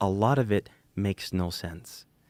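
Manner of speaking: whispered voice. Quoting what a woman said at the table, retelling a whisper. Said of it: "she said it whispering".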